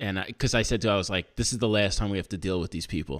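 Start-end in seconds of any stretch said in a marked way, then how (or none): none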